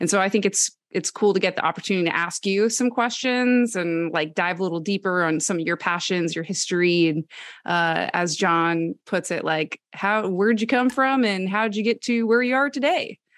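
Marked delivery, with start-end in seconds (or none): 10.0-13.1 put-on twangy Southern accent. Host repeats a friend's question to the guest: quoting John in Southern accent. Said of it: "I don't know where that accent came from".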